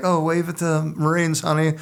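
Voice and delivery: high, gentle prompting mom voice. Retelling how mothers at the airport talked to their kids: imitating a mother. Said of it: "ladies there with their kids, and they're like".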